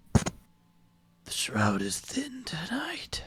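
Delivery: rough, gravel-throated delivery. Game master voicing one of a group stopping where the ambush waits, gravelly voice. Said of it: "with a gravelly voice say".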